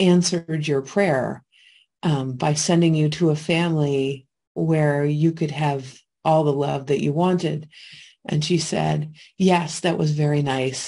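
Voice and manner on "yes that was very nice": plain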